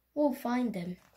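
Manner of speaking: ordinary delivery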